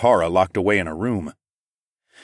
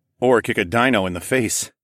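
plain

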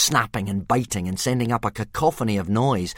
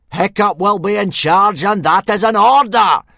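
screaming at full volume, high, booming giant voice; 10 semitones higher, 9 dB louder than usual. Narrator reading a story, Gobber gives an order, screaming. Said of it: "screamed Gobber".

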